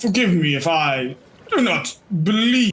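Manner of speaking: very deep, bottom-of-the-range baritone voice. Voicing a character in the story, in a very deep baritone voice. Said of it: "in like a very deep baritone voice that I can't hit".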